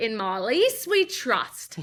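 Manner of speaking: horrible put-on Australian accent, very slow. Quoting what she told everyone on the wedding day, horrible Australian accent. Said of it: "my horrible Australian accent".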